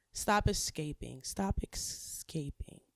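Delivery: slow, drawn-out Spanish-accented delivery.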